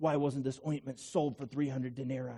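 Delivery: low, soft mutter under the breath. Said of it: "mutter under his breath".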